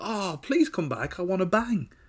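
play-acted, high shouted call without anger. Speaker retells a movie scene where she calls after him, retelling a shout. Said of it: "She shouts after him".

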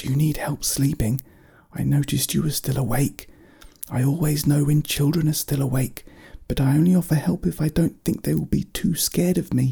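whispering. Speaking through a door at night to a child still awake, whispered. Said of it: "Gregor whispered through the door".

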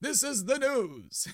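very high, slow 1940s radio announcer voice. Suggesting a style for a recording, showing a 1940s announcer voice. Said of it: "that voice called that sounds like from the 40s announcer voice? Like".

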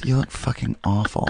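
quiet muttering under the breath. Retelling what a woman mutters as he walks by before going on stage; under her breath. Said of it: "Just under her breath".

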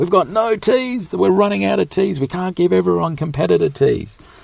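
very high, shrill, loud stressed-out ranting yell. Retelling how an organiser yelled about giving out tees: imitating someone yelling. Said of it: "absolutely yells at Lee".

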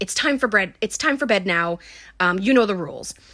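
imitated stern, mock-stern scolding tone. Retelling how she shouts his name and sends him to bed, imitating a stern tone. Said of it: "she gets all stern".

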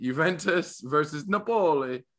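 put-on Italian accent. Announcing the next soccer matchup: put-on italian accent. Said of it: "I was saying it with an Italian accent".

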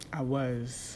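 heavy stress landed on was. Saying they were in a relationship, strong stress on was. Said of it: "Big emphasis on the word was".

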